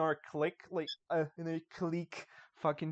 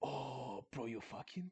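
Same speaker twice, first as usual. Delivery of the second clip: very soft, low, hushed, sleazy put-on Mexican accent; 4 semitones lower, 13 dB quieter than usual. Recalling greeting a man he spots with his girlfriend, slimy Mexican accent. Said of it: "the slimiest fucking Mexican accent".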